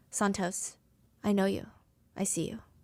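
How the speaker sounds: calm fatherly preacher-like voice. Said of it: "in this fatherly, very preacher-like voice".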